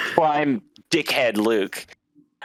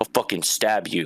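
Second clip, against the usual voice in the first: low, menacing, aggressive tone; 5 semitones lower than usual. Retelling a stranger walking past and threatening them, acting out an aggressive threat. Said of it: "walks by me all aggressive".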